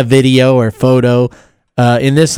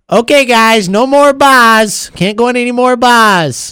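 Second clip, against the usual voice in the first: very high put-on Boston accent, "buys" drawn out; 10 semitones higher than usual. Voicing what someone should tell the team, the speaker uses a Boston accent. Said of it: "Nice Boston accent right there".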